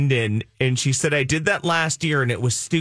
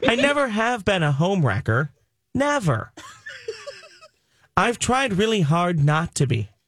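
awful sing-song voice, pitched high and swooping; 6 semitones higher than usual. Imagining a Mrs. Doubtfire-like scene, the speaker does an awful Martha Stewart impression. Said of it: "That was an awful Martha Stewart".

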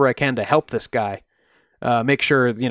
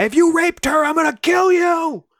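mock screaming, shrill and pitched way up. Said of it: "she was screaming at this guy".

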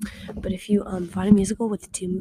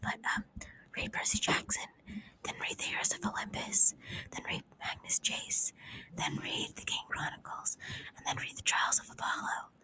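speaking in a whisper, quieter. Recommending books during quiet reading time to avoid trouble: whispering. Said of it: "So I'm whispering because I don't wanna get in trouble".

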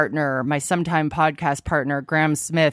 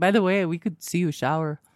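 insulting, bad put-on Spanish accent; 2 semitones higher than usual.

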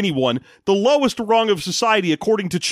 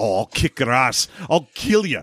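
mock threatening tone, much lower pitch; 7 semitones lower than usual. Speaker retells an old veterinarian squaring up to a police officer; imitating a threat. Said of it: "squaring up against a police officer".

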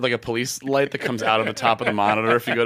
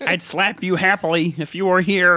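put-on puppet frog voice; 7 semitones higher, 3 dB louder than usual. Imitating the same guy, sounding like Kermit. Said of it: "Sounds like Kermit".

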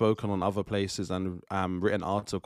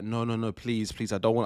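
mock panicked, pleading voice; 2 semitones higher than usual. Retelling arguing with oneself after an intrusive thought, pleading with oneself. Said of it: "I started arguing with myself".

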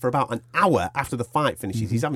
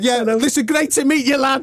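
put-on drunk rambling voice, higher and louder; 12 semitones higher, 5 dB louder than usual. Retelling a drunk winner's backstage interview, imitating drunk Nick. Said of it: "And he's like".

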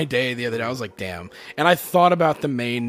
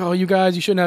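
weepy, tearful speech while crying; 6 semitones higher than usual. Retelling a friend's reaction at a surprise party: imitating someone crying. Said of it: "she's crying".

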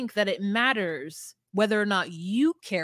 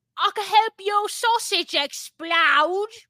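very high, loud cockney wench voice; 11 semitones higher, 6 dB louder than usual. Challenged to sound like a cockney wench, the speaker tries a cockney accent. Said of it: "okay, I can do cockney".

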